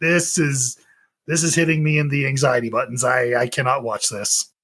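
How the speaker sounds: plain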